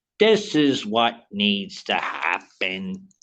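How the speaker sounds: super slow, drawn-out, scripted radio-style read. Imitating how this guy talks: imitating super slow talking. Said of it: "he talks like super slow".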